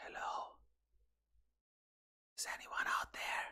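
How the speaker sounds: whispered, very quiet, hushed voice. Greeting listeners at the start, whispering. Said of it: "after just whispering".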